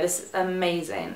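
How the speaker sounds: ordinary delivery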